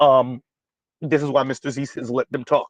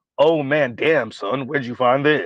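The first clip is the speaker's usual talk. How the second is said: put-on smoked-out hookah smoker voice. Reacting to a viewer's suggestion, in a put-on hookah smoker voice. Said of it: "that's more convincing now with this voice".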